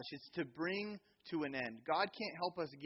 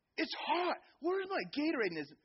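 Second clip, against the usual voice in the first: mock child yelling, much higher and louder; 13 semitones higher, 5 dB louder than usual. Retelling a kid on the dugout calling out to his parents, retelling a kid's yell. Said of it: "He's yelling at his parents".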